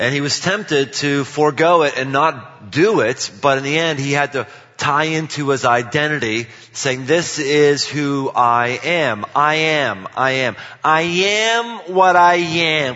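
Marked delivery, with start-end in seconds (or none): 9.3-13.0 very slow cartoon sailor voice, each "am" stretched. Speaker quotes a line to the audience as a Popeye impersonation. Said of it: "That's a pretty good Popeye impersonation".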